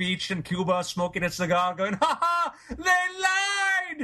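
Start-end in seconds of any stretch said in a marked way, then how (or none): 1.9-4.1 high, distant-sounding gloating shout. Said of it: "Castro standing on the beach in Cuba".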